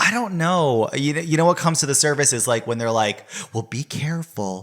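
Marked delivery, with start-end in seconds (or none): 3.5-4.6 put-on motherly voice. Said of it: "It's her voice".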